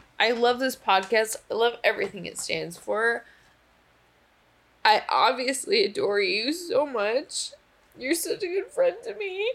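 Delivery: tearful voice, crying through the words. Thanking a friend on their podcast, crying while talking. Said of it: "And also I'm crying in front of you".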